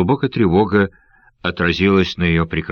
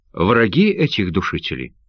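ordinary delivery

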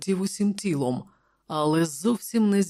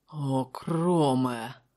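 whispered, excited; 4 semitones lower than usual. The king, pointing at the empty floor where the remains vanished, whispers. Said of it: "прошепотів він".

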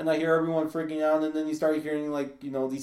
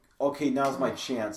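normal talking voice

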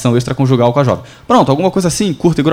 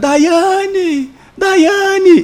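acted, frantic, very high, desperate scream. A journalist demonstrates opening a news report with ambient sound, desperate mother screaming a name. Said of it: "E eu já começo com a mãe desesperada".

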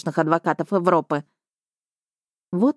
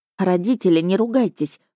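ordinary delivery, nothing marked

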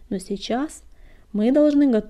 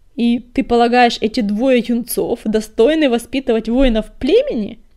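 scornful, contemptuous sneer with a loud snort; 3 semitones higher, 7 dB louder than usual. The herald challenges the choice of two young cats as mentors, contemptuous snort. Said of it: "презрительно фыркнул глашатай".

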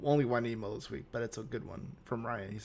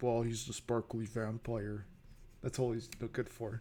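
heavy put-on sarcasm; 8 dB quieter than usual. Playing a douchebag dismissing an actor: put-on sarcastic douchebag voice. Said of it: "I'm being very sarcastic".

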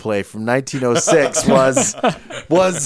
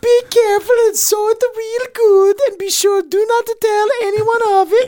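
put-on Norwegian accent, woman's voice. Voicing a Norwegian woman's words to her listener in a put-on Norwegian woman accent. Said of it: "You think a Norwegian woman sounds like female Mario?".

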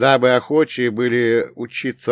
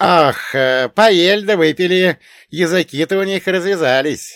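said with a grin, higher pitched; 7 semitones higher, 4 dB louder than usual. Narrator reads his companion answering about the Cossacks, grinning. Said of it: "осклабился мой ближник".

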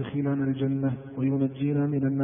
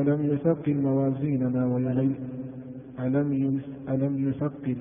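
ordinary delivery

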